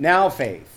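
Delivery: heavy stress on the word now. Quoting Hebrews 11, always emphasising it this way: stress on now. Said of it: "I always put the emphasis on now".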